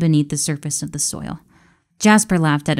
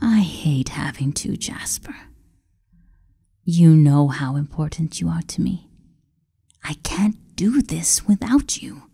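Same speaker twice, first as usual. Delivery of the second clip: cold, controlling, falsely tender, feigned affectionate voice. An emperor manipulatively tells his servant how much he is needed. cold, controlling, falsely tender. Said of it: "You know the role I must fulfill of the benevolent Emperor. You know I cannot falter. You know I cannot lose their trust. / No, [name] growled".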